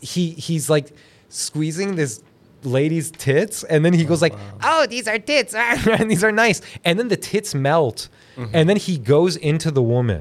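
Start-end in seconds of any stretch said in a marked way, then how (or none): 4.3-6.6 put-on pitched-up, lecherous, pervy old man voice. Describing a scene from an anime, pervy Wicked City old man voice. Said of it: "he talks like this".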